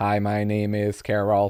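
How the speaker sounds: put-on robotic voice. Recalling how older voice assistants used to sound: imitating a robotic voice. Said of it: "Very robotic".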